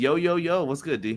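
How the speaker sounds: plain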